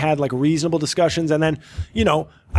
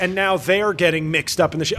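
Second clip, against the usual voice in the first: ordinary talk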